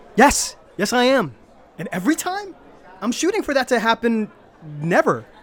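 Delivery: upset, heated, loud and high worked-up outburst. Answering someone who told them to just get over it, worked up. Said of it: "calm down".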